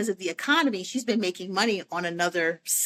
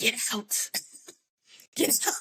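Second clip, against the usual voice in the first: slow, drawn-out whisper under the breath; 4 semitones higher, 4 dB quieter than usual. Retelling a job interview where reception staff warned the speaker: imitating a whisper. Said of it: "they whispered to me".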